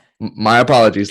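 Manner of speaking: normal talking voice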